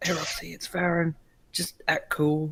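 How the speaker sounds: slow, soft, hushed, voiceless half-whisper. Leaning in close to it and speaking to it in character: half-whispering in character. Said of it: "I'm gonna whisper to it and be like".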